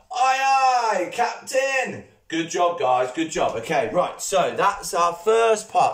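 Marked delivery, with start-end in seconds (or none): 0.1-2.0 loud, high shout with aye stretched long. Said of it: "gotta be louder than that".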